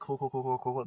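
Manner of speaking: quick, clipped-together, very fast run of cools. Describing what people say these days, cool said rapidly several times. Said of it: "They say cool a bunch really fast".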